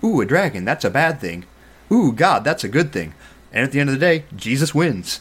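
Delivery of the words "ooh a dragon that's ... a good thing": put-on naive, simple, childlike reading-aloud voice with oohs. Retelling what another man said, the speaker reads like a child would. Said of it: "read it like a child would read it and go".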